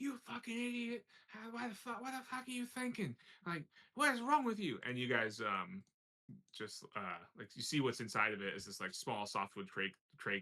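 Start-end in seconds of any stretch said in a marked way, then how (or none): 0.0-4.8 mock very high, shrill, enraged screaming. Retelling a guy going off after a crate falls open, retelling an angry scream. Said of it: "He's screaming at you like".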